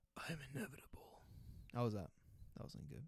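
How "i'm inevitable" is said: hushed, breathy, whispered supervillain voice. Closing a point about yearly improvement, speaker quotes the villain in a Thanos impression. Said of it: "my Thanos impression".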